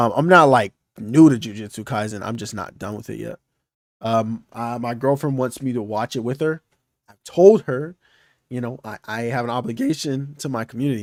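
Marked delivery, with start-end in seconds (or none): 9.1-11.0 cracking, breaking voice. Speaker discussing watching a series with a girlfriend, voice cracking. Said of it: "My voice cracked".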